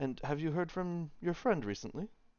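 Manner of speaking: voice dropped a touch, slightly hushed, direct, pointed. Acting out a man asking you about your friend, slightly lowered voice. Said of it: "he sort of lowers his voice just a little bit".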